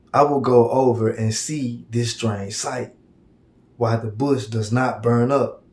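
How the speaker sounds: ordinary delivery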